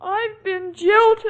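words spoken through tears, crying. Asked what's the matter by someone who notices the tears, answering while crying. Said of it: "You're crying".

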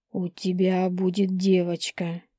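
ordinary delivery

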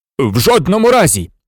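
abrupt, sudden, cried-out exclamation. The professor refuses Marusia's request: cried out. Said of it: "Скрикнув професор".

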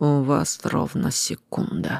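contemptuous, through clenched teeth. Narrator reading the self-named mistress's line to her captives, contemptuous, through gritted teeth. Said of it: "презрительно процедила".

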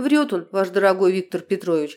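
plain

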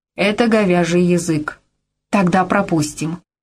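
ordinary delivery

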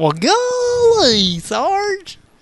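very high, animated, swooping, drawn-out golly. Answering a request to sound like an angry Gomer Pyle: Gomer Pyle voice. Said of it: "Angry Gomer Pyle?".

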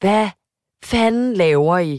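loud, slow, bellowed shout. Retelling how a man shouted across the room at some girls, retelling a shout. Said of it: "råber han bare sådan igennem lokalet".

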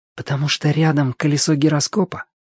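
soft whispered voice. Asking a companion after his remark, a whispered question. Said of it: "шепотом спросил Тенька".

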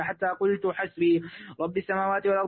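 usual speaking voice

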